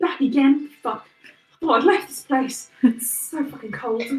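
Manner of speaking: sour, private grumbling mutter under the breath. Seeing the group back again, [name] muttering under her breath. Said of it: "you hear [name] just under her breath".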